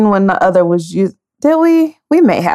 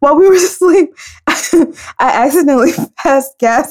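words broken up by giggling laughter; 3 semitones higher than usual. Finally telling the embarrassing story, laughing while talking. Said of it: "it's not even that funny".

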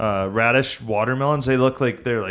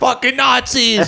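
put-on very high, loud screaming; 12 semitones higher, 5 dB louder than usual. Retelling screaming at the Nazis in a show: imitating own screaming. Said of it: "just screaming about the Nazis".

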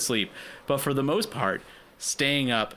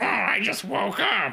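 put-on very high cranky old woman voice; 10 semitones higher than usual. Speaker voicing an old lady heard in the background, imitating a cranky old lady. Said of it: "cranky Old lady in the background like".

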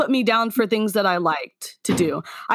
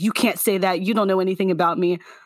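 mock-defensive delivery; 2 semitones lower than usual. Retelling how she answered when criticized: imitating someone getting defensive. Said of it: "very defensive and be like".

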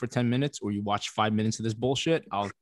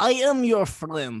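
mock thick, heavy Russian accent, higher and louder; 11 semitones higher, 4 dB louder than usual. Imitating an actress who plays up her accent: heavy Russian accent. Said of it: "she stresses that accent hard".

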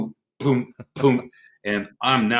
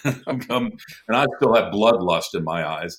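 plain

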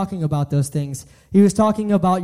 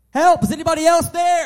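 very high-pitched yelling; 10 semitones higher than usual. Telling a joke about a man hanging from a cliff branch: retelling a yell for help. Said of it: "he finally starts yelling".

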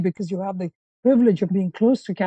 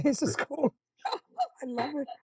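high, soft, laughing through the words. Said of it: "I mean, I'm laughing".

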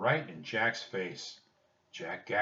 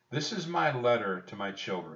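plain reading voice

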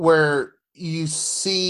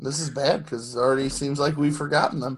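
plain

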